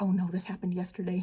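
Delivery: put-on muttering under breath. Retelling own remark at a photo op: imitating muttering under breath. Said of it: "kind of under my breath".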